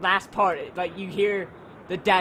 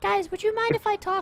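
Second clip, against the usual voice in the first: put-on very high-pitched, polite little kid voice; 13 semitones higher than usual. Retelling what a kid said to a group, in a high-pitched kid voice. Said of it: "I sound like a very high pitched".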